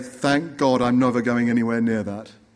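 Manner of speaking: plain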